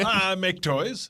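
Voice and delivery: high little elf character voice. Answering a question in character after being asked for an elf impression: elf impression. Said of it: "do your elf impression".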